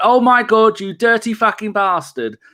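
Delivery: shouting, pitched high. Retelling a disallowed goal while applauding: imitating own shouting. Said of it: "applauding and shouting".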